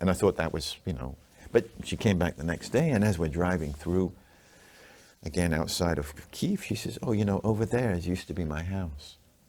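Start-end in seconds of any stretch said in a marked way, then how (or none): 7.0-9.2 put-on nonchalant, offhand tone. Retelling how she pointed out where her house used to be: imitating a nonchalant remark. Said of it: "she said it very offhandish, very nonchalant".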